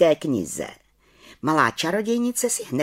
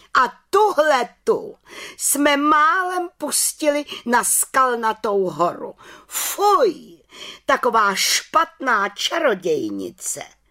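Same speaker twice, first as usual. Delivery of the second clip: indignant, scandalized exclamation, higher pitch, slow; 7 semitones higher than usual. The head witch suddenly cries out about the little witch, indignant exclamation. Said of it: "pohoršeně vykřikla".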